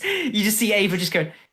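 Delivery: ordinary delivery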